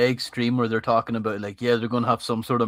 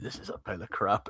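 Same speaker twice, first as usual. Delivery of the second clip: low-key whispered mutter under the breath; 3 semitones lower, 10 dB quieter than usual. Retelling a remark made beside an employee: imitating muttering under breath. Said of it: "under my breath say".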